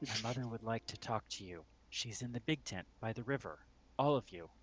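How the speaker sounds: quiet whisper. After you bend down to her level, the kid whispers to you. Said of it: "she whispers into or says to you".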